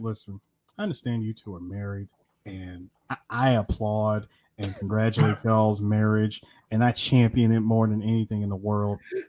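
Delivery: mock straight-faced tone. Retelling what was said to a friend's wife: retelling a deadpan line. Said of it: "say with the straightest face possible".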